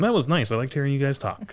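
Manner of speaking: pleasant, kindly, nice aunt voice. Imitating an aunt's feedback on the episode: imitating Aunt Jo. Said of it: "nice aunt voice".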